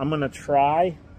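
TRY leaned on and slowed. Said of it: "emphasis on the word try".

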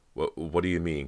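stammering, stuttering. Cody, edging toward the door, asks Callie what she means, stammering. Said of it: "Cody stammered".

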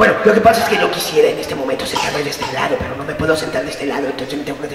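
throat clearing, then fast nervous rattled-off rambling.

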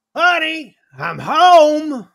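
very high, very loud sing-song holler, "home" stretched. Narrating players hearing the Sanctum's front doors open, a familiar voice booming yell. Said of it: "a familiar booming voice yells out".

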